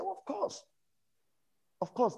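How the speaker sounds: very high, eager, delighted voice.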